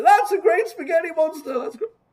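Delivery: very high, loud, exaggerated hollow gushing.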